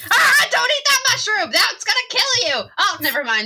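high character voice with swooping, swinging pitch. Praising the movie's Toad, then acting him out: Toad voice. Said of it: "And that Toad, too".

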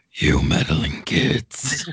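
very low, deep villain grumble. Imagining what Bolas would say next, Bolas grumble. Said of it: "Did you like my Bolas grumble?".

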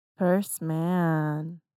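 sultry delivery. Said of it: "You said that real sexy".

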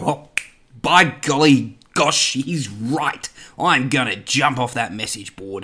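exaggerated, broad ocker Australian accent, slow. Imitating imagined people agreeing with the opinion: broad ocker Aussie voice. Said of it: "I've turned into this really Oka Aussie voice".

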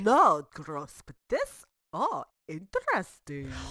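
loud, swooping, hammy, badly done put-on Russian accent. Presenting a deviled egg recipe, speaking in a bad russian accent. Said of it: "speak in bad Russian accents".

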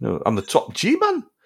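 put-on very slow, drawled Geordie accent. Joke about how he would sound if he was Geordie: Andrew Tate as a Geordie. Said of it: "if he was Geordie".

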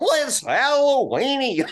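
very high cartoon voice, swooping around. Welcoming guests on Halloween, doing a Goofy voice. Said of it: "How would Goofy say Halloweeny".

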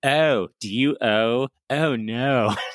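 put-on Baltimore Maryland accent. Recounting a 30 Rock episode, the speaker quotes Elizabeth Banks's Maryland accent. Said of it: "is that a Maryland accent?".

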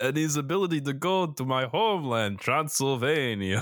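put-on vampire voice. A podcast co-host does a comedy bit as Dracula, Dracula voice. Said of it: "I'm just become Dracula".

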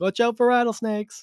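high, loud yelling.

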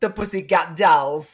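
put-on mimicked Jamaican accent. Mimicking how the other speaker just said a band name, in a Jamaican accent. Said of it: "it sounded like you had a Jamaican accent".

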